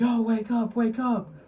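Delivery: very high, loud, very drawn-out screaming. Retelling how someone yelled to wake a sleeping friend: imitating someone screaming. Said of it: "dude was screaming at him".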